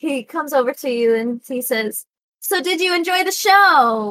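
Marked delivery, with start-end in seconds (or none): 2.4-4.1 cocky, slightly tipsy, pitched up, "show" drawn out. Voicing a man who comes over after the show: cocky, a little drunk. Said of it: "almost being cocky".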